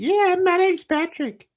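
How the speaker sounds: put-on voice, pitched very high. Joking with others about how he probably says it in that voice, Patrick Mahomes voice. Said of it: "He probably says it in that voice too".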